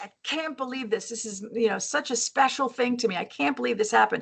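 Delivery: upset, dismayed outburst. Retelling own words on finding a special bowl broken: imitating own upset self. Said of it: "And I was really upset".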